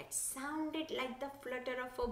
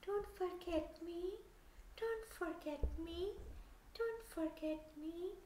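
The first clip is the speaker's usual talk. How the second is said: soft, high, gentle calling voice, sounding faraway; 5 semitones higher, 4 dB quieter than usual. Narrator reads the voice the farmer hears calling in the distance, soft calling voice. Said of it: "he heard a soft voice calling".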